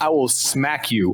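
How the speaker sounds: high, slow, stretched, scolding tone. Interrogating a betta fish in a game scene: yelling at a fish. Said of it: "It's just me yelling at a".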